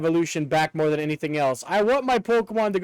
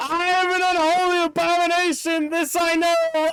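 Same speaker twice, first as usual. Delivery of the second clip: put-on scream, higher pitch; 11 semitones higher than usual. Retelling what a game character screams: imitating a character screaming. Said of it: "He just fucking screams".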